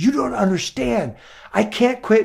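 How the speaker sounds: put-on, heated angry outburst, stuck repeating a word. Retelling a friend's wife snapping back at a suggestion: imitating someone angry. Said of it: "she got so angry at me".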